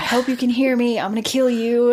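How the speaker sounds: real, mad yelling. Acting out a man yelling into a storm drain grate: imitating an angry yell. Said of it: "he's just real mad and yelling".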